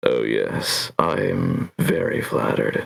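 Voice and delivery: very low, sultry, seductive voice. Redoing an earlier reply on the spot, the speaker says it again, more seductive. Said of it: "I'm gonna do it more seductive".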